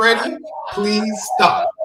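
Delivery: slow, sad, sobbing mock crying.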